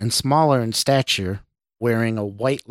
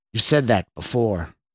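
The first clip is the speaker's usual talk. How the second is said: plain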